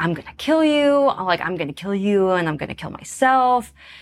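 mock threatening, put-on menacing delivery. Retelling a man's words, acting out his threat. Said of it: "acting out attacker's threat".

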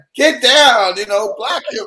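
put-on very high, loud shouting. Retelling yelling at a son's basketball game: imitating own yelling at a game. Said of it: "yelling at the top of my lungs".

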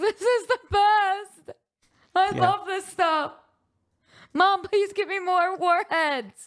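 acted, very high, blubbering, drawn-out sobbing. Acting out a kid eating extra-sour candy, mock sobbing. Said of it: "crying, sobbing".

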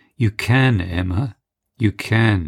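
kindly, gentle, slow, consoling tone. A man answers a woman who spoke with deep sadness: gentle. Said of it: "he said gently".

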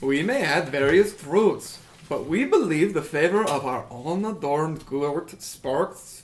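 bad, poor put-on Swedish accent. Playing a character who claims to be swedish: bad swedish accent. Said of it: "this accent".

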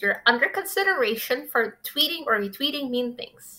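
put-on cartoon pig voice. Retelling what they were told in a meeting, in a Miss Piggy voice. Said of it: "in a sort of Miss Piggy voice".

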